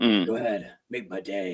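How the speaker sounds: very low, deep-dropped voice. Showing a launching-off line to get into the voice: Clint Eastwood voice. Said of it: "what voice actors do where they have, like, a launching off thing".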